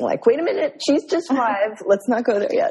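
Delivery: on the verge of tears. Responding with chills to what was just shared, almost crying. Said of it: "I have chills again and I'm almost crying".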